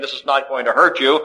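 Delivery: ordinary delivery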